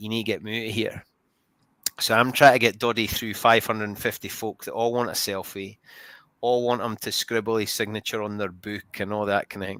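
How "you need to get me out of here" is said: half-whispered under the breath, soft and hushed. Telling how a man half-whispered to the speaker after the game, retelling a half-whisper. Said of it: "he whispers to me".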